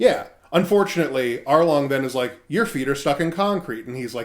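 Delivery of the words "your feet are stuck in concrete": ordinary delivery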